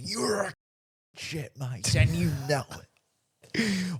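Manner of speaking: mock confident, unhesitating, very slow and high delivery. Retelling a heckle shouted over the fence: imitating a heckler, no hesitation. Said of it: "There was no hesitation".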